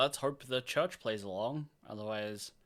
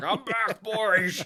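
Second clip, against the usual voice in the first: very loud, high-pitched orc warlord yell; 7 semitones higher, 8 dB louder than usual. Joking about an orc war boss who keeps coming back: orc war boss voice. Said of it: "And he's just like".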